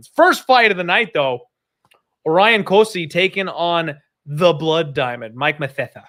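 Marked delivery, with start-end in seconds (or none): 5.4-5.9 put-on lisping voice. Naming a fighter while introducing the night's first fight: Sid voice. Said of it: "the Sid voice when I say his name".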